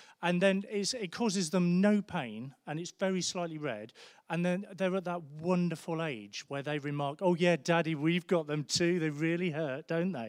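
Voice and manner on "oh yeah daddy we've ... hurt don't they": beautifully sarcastic, British-style tone. Retelling what the kids said about their tiny bites: imitating the kids' british sarcasm. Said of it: "a beautiful British sarcasm".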